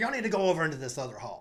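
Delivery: fast, loud, rude tone.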